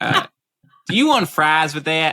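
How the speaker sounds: put-on rural American Southern accent. Asked by co-hosts for an accent, a co-host does his best southern redneck accent. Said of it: "my best Southern redneck accent".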